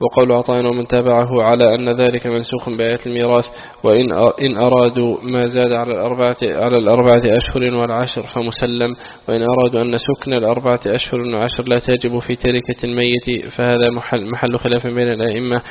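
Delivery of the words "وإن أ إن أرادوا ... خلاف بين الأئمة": ordinary talk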